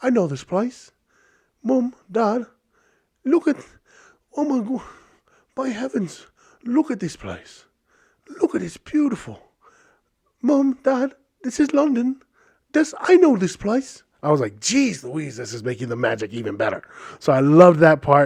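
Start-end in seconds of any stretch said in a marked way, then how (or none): 0.0-14.0 very high, possibly bad put-on London accent. Recounting a train ride into london, quoting them recognizing the place: put-on london accent. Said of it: "I don't know if that's a good accent".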